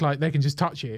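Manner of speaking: usual speaking voice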